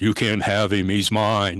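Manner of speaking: horror-movie possessed demon voice. Retelling what the voice said next while holding him, in a horror movie voice. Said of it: "the horror movie voice comes back on".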